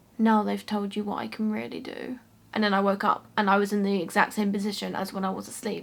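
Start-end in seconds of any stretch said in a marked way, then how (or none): 0.2-2.2 put-on scary husky whispery voice. Recounting a sleep experience, the speaker repeats an entity's words: imitating a scary whisper. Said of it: "the most scariest whispery voice, man, husky voice just said".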